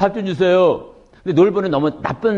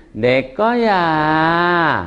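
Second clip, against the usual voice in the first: put-on childlike voice with long, drawn-out final syllable; 3 semitones lower than usual. Demonstrating different speech styles, the child's way: child's speech, drawn-out ending. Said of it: "어린이 말투는 끝에를 길게".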